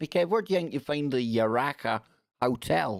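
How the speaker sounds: really bad, clumsy, put-on Australian accent. Kev imagining someone asking him a question, in a really bad Australian accent. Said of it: "That was a really bad Australian accent".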